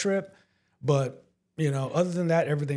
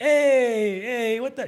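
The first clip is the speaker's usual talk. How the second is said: put-on thick Italian accent, loud, high, drawn-out "hey"; 8 semitones higher, 5 dB louder than usual. Describing two business owners from italy: strong italian accent impression. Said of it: "so they have the hardcore".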